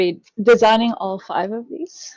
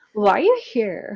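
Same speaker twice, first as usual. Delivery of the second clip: put-on teenager voice. Explaining how they read a character, the speaker demonstrates a teenager voice. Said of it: "like when a teenager or whatever is like".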